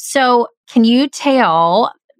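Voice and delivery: slow, drawn-out Southern drawl. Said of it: "am I, s-, I'm living in the South now".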